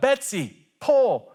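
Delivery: very high, loud hollered yell. Telling a joke, acting out the farmer's final yell to his mule: retelling a farmer's yell. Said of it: "he finally yells out".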